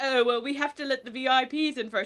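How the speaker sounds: fake, put-on British accent. Retelling what the bar owner said at the door: British accent imitating Raheem. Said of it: "you can't fake a British accent".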